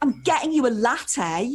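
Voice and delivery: aggressive insistence.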